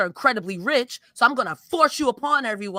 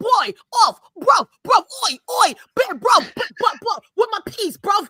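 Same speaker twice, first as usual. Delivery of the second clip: very high, squeaky put-on voice; 10 semitones higher, 4 dB louder than usual. Imagining what a wrestler would say if he came around: Will Ospreay impression. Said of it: "if Will Ospreay came around again, he'd be like".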